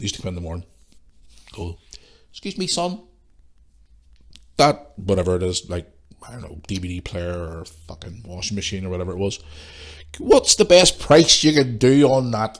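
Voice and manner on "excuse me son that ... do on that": put-on elderly customer voice. Recalling customers who came in asking for the best price: put-on customer voice. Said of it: "I'm going to put a voice on here".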